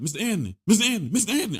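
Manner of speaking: mock urgent, panicky, rising, repeated calling out. Retelling how a woman kept calling his name, imitating a panicked call. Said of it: "I hear panic in her voice".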